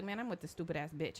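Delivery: put-on angry voice. Acting out a boyfriend talking to his friends about his girlfriend: imitating an angry boyfriend. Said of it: "if he's angry".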